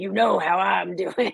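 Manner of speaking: growly put-on imitation voice.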